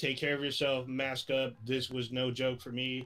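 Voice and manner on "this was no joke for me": normal talking voice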